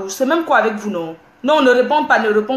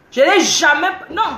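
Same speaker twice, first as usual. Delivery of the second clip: heated, insistent, raised voice. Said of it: "je ne crie pas".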